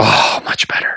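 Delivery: low, soft whisper, breathed out with relief.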